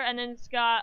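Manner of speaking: ordinary delivery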